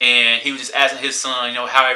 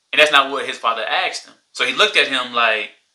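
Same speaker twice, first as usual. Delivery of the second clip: ordinary talk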